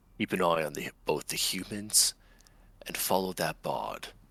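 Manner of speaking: whispering. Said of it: "I'm whispering to her".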